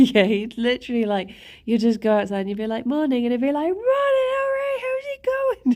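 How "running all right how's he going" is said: very high, called-out shout, acted out. Imitating a man who answers your greeting while running, retelling a shout. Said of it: "his quiet voice is shouting".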